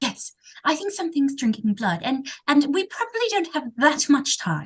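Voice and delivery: put-on English nanny accent. Explaining in character that something is drinking blood: Mary Poppins accent. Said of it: "she sounds like Mary Poppins".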